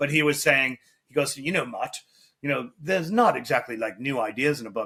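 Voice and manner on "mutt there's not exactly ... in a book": fake snarky British accent, put-on. Retelling what a british interviewer said to him about his book: imitating a snarky british accent. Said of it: "did a great interview on the book with a real snarky accent".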